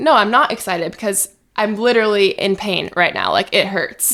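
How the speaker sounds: usual speaking voice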